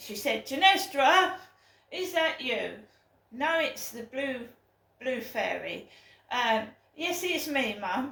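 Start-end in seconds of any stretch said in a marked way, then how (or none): 0.5-2.7 loud, booming, displeased, unhappy voice. Imitating the speaker's mum on the phone, imitating mum's booming, unhappy voice. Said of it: "A booming loud voice".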